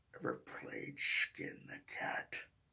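breathy, menacing whisper. Offering another Freddy line, the speaker does a Freddy impression. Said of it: "everyone knows Freddy's voice. It's like this".

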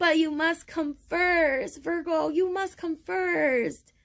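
very high, choked-up, on the verge of crying. A card reader speaks to Virgo listeners, near tears. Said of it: "I'm about to start crying".

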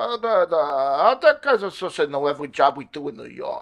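slow mumble with words stretched and drawn out. Recall the only line the actor had, as a mumbling Benicio del Toro impression. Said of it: "he mumbled them and he goes".

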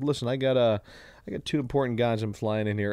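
plain

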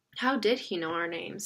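plain

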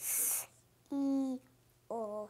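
sounds stretched out slowly. Answering a teacher's prompt, saying the word's sounds: stretching out the sounds slowly. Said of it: "Say it slowly to stretch out the sounds".

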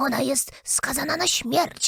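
hushed, secretive whisper. The Rabbit stands on tiptoe at Alice's ear, whispered into her ear. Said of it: "szepnął Alicji do ucha".

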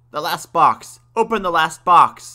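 very loud, high-pitched yell. The grandfather, covering his ears, yells at the crying baby: yelling. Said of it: "he yelled".

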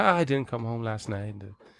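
mock laughing. Retelling what a man said as he came over, imitating someone laughing. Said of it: "he comes over laughing".

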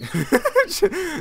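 very high, squeaky, wide-swinging mock voice.

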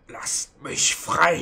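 strained words forced through clenched teeth. Game master voicing a chained captive: pressed through gritted teeth. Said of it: "durch die Zähne ein drückendes sagen".

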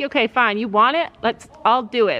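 normal talking voice

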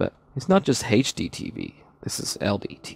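hushed, breathy, whispered commercial announcer voice. Speaker showing viewers around, attempting an advert voice. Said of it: "I was trying to actually do an advert voice".

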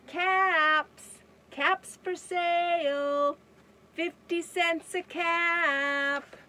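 loud, high street vendor's call, "cap" drawn out. Reading a children's story aloud, as the cap peddler calling out. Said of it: "Once there was a peddler who sold caps".

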